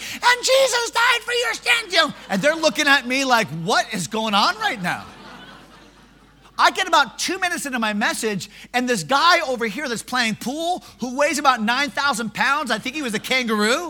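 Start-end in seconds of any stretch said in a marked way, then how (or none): 0.0-2.1 very high, squeaky little pipsqueak voice. Retelling speaking up while angry guys turn to look, in a high pipsqueak voice. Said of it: "I got this high pipsqueak voice".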